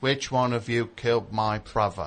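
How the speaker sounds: put-on British movie-star accent. Challenged to swap accents, speaker does a Michael Caine British accent. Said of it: "I'll do my British accent".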